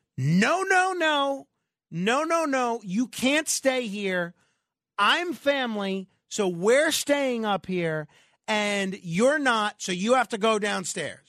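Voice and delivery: imitated woman's scream. Retelling what a woman screamed at another woman: imitating a woman screaming. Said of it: "she starts screaming at this lady".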